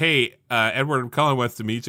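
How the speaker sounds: normal talking voice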